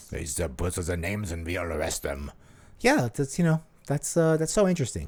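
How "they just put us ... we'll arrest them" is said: very low, deep, hushed put-on German accent. Retelling an east german spying story, in a german accent. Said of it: "for me doing a German accent".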